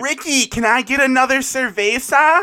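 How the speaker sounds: loud, entitled voice. Mocking a tourist on vacation ordering another beer from a waiter: mock entitled Karen tourist. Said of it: "like a Karen trying to order a beer".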